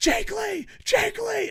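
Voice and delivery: put-on, very high, shrill, all-out scream. Retelling cheering at a wrestling show: retelling own screaming. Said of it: "And I'm screaming it".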